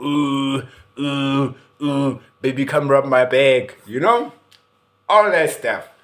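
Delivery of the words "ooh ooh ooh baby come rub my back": slow, drawn-out aching moan. Retelling a wife in pain walking the ward: imitating wife moaning in pain. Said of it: "She was pushing the drip and she was going".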